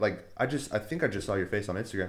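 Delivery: normal talking voice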